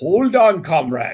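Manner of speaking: loud, wary, worried gorilla voice. Voicing a gorilla soldier with second thoughts: concerned gorilla soldier voice. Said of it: "And is like".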